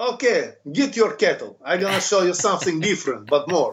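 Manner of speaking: put-on Russian accent, in character. Speaker recalls teaching a class in character as Milos, Milos Russian accent. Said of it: "like a Russian".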